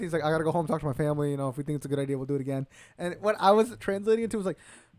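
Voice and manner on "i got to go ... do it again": put-on out-of-breath, breathless speech. Retelling a fighter's answer after the fight: imitating an out-of-breath fighter. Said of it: "out of breath".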